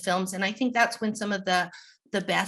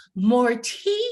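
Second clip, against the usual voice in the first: put-on loud, bright, ringing, carrying delivery; 4 semitones higher, 4 dB louder than usual. Describing an improv line delivered so the audience can't tell, loud and bright. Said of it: "I would say it very loud and brightly".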